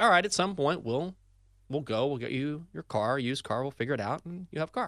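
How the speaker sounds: plain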